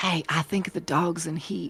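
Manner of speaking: whispering. Speaking in character to Ramsey so Noctis won't hear: whispering to Ramsey. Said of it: "I will whisper to Ramsey".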